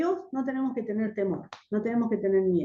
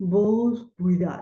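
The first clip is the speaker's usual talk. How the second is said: put-on thick, harsh, ugly voice; 2 semitones lower than usual. Retelling a frightening encounter, the speaker imitates a girl's thick, ugly voice. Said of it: "con una voz gruesa, fuerte, fea".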